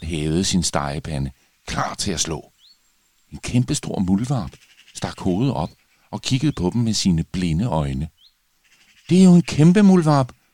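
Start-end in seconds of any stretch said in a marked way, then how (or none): 9.1-10.3 very loud, very high relieved exclamation. A princess, frying pan raised, sees a giant mole and exclaims with relief. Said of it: "udbrød prinsesse Skrald lettet".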